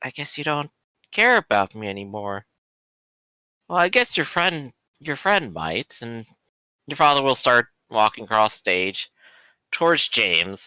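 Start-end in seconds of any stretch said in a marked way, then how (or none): 0.0-6.0 spooky ghost character voice. Voicing a ghost who speaks to a player character: voicing a ghost. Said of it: "the ghost there is, uh, looking at you, Dante, and going".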